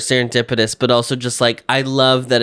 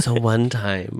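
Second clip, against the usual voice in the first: hushed, quieter whisper; 5 dB quieter than usual. Starting a story about their mom, then noticing: whispering. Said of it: "why am I whispering?".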